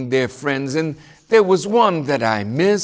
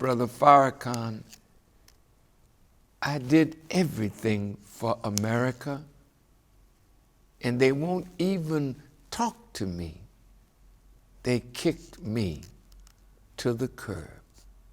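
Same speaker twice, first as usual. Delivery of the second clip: acted, very sad, sorrowful, dejected, heavy-hearted voice; 4 semitones lower, 10 dB quieter than usual. Recounting what his host told him in a private room: retelling a very sad tone. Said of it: "he said to me in a very sad tone".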